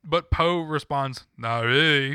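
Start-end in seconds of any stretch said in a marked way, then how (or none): 1.3-2.1 lackadaisical mumbled put-on voice, louder. Quoting a movie reply the way it was delivered: Sylvester Stallone voice. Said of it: "he says it like Sylvester Stallone".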